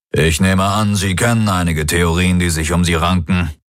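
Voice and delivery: plain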